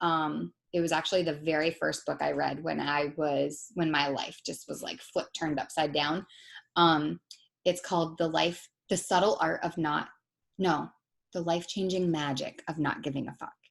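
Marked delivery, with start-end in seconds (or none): 11.3-13.5 hushed, under-the-breath half-whisper. Naming a book title while her kids may still be awake, half-whispering. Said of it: "I'm whispering it because I think my kids are still awake".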